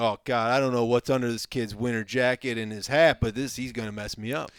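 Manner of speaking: plain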